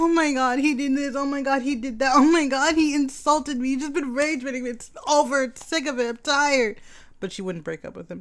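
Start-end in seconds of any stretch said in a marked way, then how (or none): 0.0-6.8 play-acted tearful whining, high and weepy, crying. Retelling how someone complained about her boyfriend: imitating H crying. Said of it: "H was crying about it".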